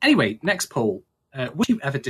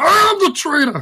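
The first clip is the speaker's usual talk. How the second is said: shrill, very high, drawn-out, badly put-on squeak; 7 dB louder than usual. Reading out last episode's poll options, a poor impression of the co-host. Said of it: "that's a very poor impression of you".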